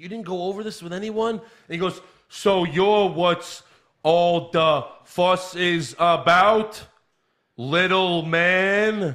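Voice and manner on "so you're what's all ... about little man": stiff robot voice, very slow, word by word. Mocking a man who still doesn't know how to talk, imitate his robotic talk, one word at a time. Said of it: "He talks one word at a time".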